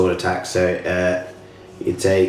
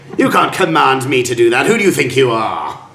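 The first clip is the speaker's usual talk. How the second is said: loud, high, mocking, gloating villain laugh. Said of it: "So he just laughs it off".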